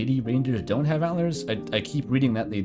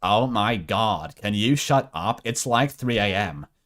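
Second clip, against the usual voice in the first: put-on Valley Girl accent and voice; 3 semitones lower than usual. Voicing a character on stream: Valley Girl voice. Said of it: "I was going for a Valley Girl".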